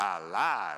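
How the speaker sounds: put-on Louisiana accent. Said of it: "in his best Louisiana accent".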